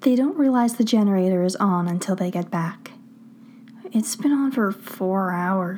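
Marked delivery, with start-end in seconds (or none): 3.9-5.8 worn-out, tired, weary tone. Stiles speaks after they get back home, tired. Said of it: "Stiles says tiredly".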